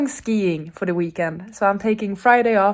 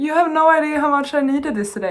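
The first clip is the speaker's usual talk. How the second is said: high voice on the verge of crying; 7 semitones higher than usual. Opening an unexpected book package from a friend, close to tears. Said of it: "I'm going to cry".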